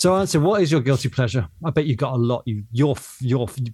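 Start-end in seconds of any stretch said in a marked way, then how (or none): none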